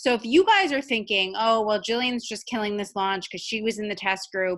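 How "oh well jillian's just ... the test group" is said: ordinary talk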